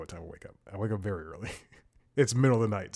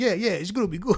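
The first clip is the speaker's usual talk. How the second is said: put-on rushed, hurried man's voice, higher and louder; 10 semitones higher, 4 dB louder than usual. Retelling a phone call with someone in a hurry, driving: imitating a hurried man driving. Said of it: "and that's how he sounded too".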